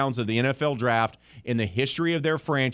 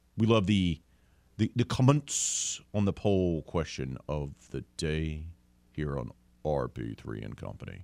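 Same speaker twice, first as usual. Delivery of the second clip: fake, very deep put-on bass voice; 10 semitones lower, 5 dB quieter than usual. Plugging the show's poll question again, now in a put-on very deep voice. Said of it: "How about that deep?".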